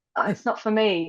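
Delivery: ordinary talk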